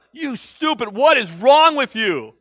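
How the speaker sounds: mock angry, drawn-out, mad shouting. Recalling getting mad at a TV show, the speaker reenacts yelling at the TV. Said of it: "I would yell at the TV".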